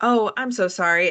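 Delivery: canned, robotic, mechanical, machine-like delivery. Acting out a scripted apology to a customer: robotic apology. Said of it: "I kinda sound a little bit like a robot".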